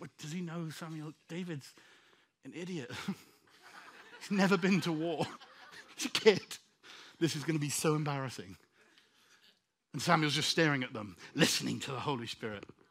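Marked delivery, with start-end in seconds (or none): 0.0-8.6 muttering under breath, lower and quieter. Acting out the brothers talking about David while Samuel waits: whispering under their breath. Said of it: "trying to whisper under their breath".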